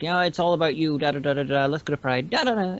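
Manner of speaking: normal talking voice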